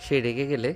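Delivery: plain reading voice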